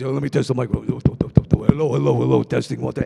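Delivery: loud, rough, creaky put-on voice. Voicing the show's engineer character Hank testing the mic: Hank engineer character voice. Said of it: "Hank, he's like this".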